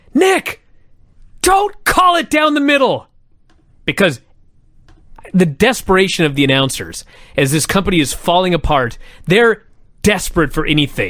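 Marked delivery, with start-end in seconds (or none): 0.1-3.0 mock, pitched way up, shrill, exasperated, frustrated scream. Recounting an announcer's outburst at the referee, retelling a frustrated scream. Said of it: "he is frustrated and he screams".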